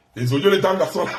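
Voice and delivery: ordinary talk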